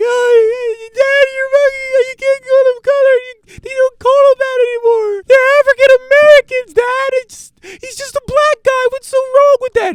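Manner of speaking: acted, shrill, very high, loud tearful crying. Acting out a daughter pleading with her father: imitating a crying daughter. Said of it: "his daughter's crying like".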